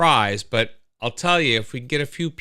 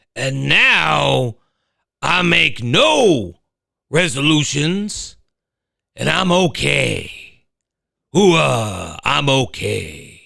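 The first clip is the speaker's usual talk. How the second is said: slow, rough, raised growling voice; 5 dB louder than usual. Trying out an impression while talking about resolutions, in a Pacino voice. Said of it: "let me see if I can do this in a Pacino voice".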